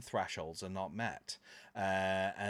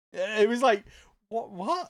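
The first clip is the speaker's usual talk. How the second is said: ordinary delivery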